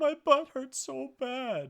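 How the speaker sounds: very high, drawn-out, slow, tearful sobbing voice. Retelling a son coming in at night, imitating Emmett crying. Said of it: "he's crying".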